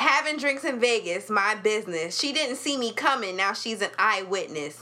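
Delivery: ordinary talk, nothing marked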